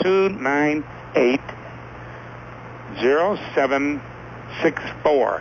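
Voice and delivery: slow, with words spaced out.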